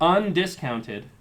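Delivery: undiscounted drawn out slow, loud and emphatic.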